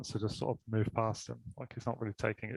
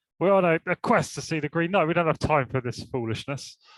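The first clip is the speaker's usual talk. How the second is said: put-on, loud, pitched-up, dismissive brush-off; 6 semitones higher, 7 dB louder than usual. In a role-play, Ranulfus, on a quest, meets someone in his way: dismissive Ranulfus. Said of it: "I think initially I'm dismissive".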